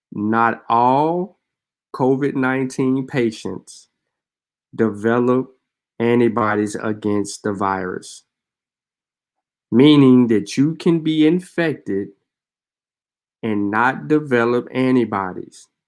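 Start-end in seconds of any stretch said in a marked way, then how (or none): 0.1-8.2 deliberately slow, spelled-out delivery. The speaker repeats a statement, having announced they will say it slowly. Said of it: "I'm gonna say this slowly".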